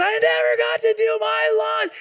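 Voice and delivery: very high, loud tantrum scream. Retelling how he screamed as everyone took a bow, retelling a scream. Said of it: "And he screams".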